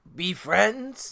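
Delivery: zombie voice. Imagining a character who just talks like a zombie, in a zombie voice. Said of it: "he just talks like a zombie".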